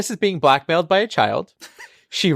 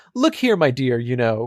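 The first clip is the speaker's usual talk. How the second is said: mock slimy, smarmy, sophisticated, charming voice; 3 semitones lower than usual. Describing a sophisticated, smarmy character, imitating smarmy charm. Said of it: "he charmingly said".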